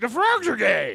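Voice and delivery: loud put-on growling voice. Retelling a friend's open-mic act: bad Alex Jones impression. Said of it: "doing a really bad Alex Jones impression".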